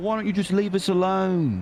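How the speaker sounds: put-on very high-pitched, shaky, not-so-good British accent. Speaker retelling a clip where a man picks on Poet: imitating Poet's British accent. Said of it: "Now do that again".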